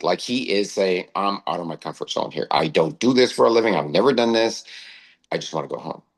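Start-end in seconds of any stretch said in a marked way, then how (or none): 1.2-5.9 upset, distraught, overwhelmed lamenting voice. Retelling what an upset young man said: imitating a distraught young man. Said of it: "And he's distraught".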